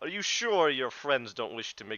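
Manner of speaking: muffled, as through a helmet. Narrating a character removing his helm while speaking, muffled voice. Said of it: "it's a bit muffled now".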